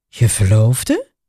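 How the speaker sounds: very low, astonished, surprised tone. A woman echoes a young man's word back at him, surprised echo. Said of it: "Echoet Annegien verbaasd".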